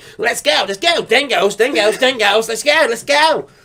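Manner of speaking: cartoonish, high-pitched kangaroo character voice. Acting out a kangaroo picking a fight: fast-talking kangaroo voice. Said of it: "I imagine a kangaroo talks fast".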